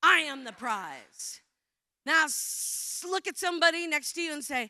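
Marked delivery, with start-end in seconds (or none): 0.0-1.4 angry delivery, raised volume. Coaching a group, the speaker shows the phrase said like you're angry: angry delivery. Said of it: "like you're angry".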